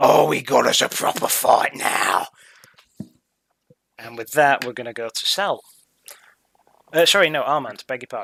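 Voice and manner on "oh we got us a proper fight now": rough-edged slow snarling. Game master voicing a foe struck by a staff, facing the player: snarling. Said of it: "he snarls at you".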